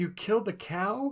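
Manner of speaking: acted-out weepy, tear-choked sobbing, high and slow. Retelling what someone said, sobbing, after a cow was shot in a game: imitating someone sobbing. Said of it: "start sobbing".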